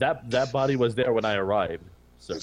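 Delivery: plain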